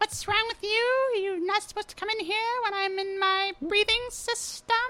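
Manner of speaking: stupid-sounding voice. Retelling a parody scene where a man scolds someone who walked in, really stupid voice. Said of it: "He sounds like this really stupid voice".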